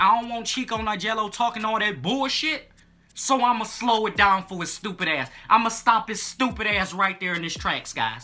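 ordinary delivery

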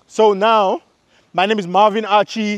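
full-on loud, high-pitched yelling. Repeating their channel introduction, now as a demonstration: yelling. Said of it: "So now I'm gonna go ahead and yell".

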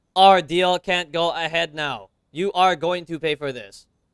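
mechanical, robotic delivery. Mimicking how another character just said that line, robot voice. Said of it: "He said that like a robot".

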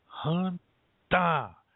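"Hanta" said with the "da" syllable stressed. Teaching how to say hanta to get someone out of the way, stressing 'da'. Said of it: "you really emphasize that da part".

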